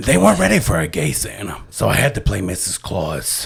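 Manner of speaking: low, dropped voice of a heavy smoker. Recounting a pitch to the Macy's Day guys, in a smoker voice. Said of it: "But then you throw in that smoker voice".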